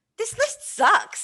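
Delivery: slow, high-pitched, disgusted tone.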